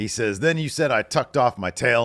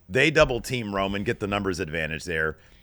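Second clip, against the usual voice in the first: usual speaking voice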